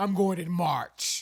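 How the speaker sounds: very loud, very slow, booming grown-up tone. Teasing a friend by repeating their line: imitating a grown-up tone. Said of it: "you said that like a, like a grown".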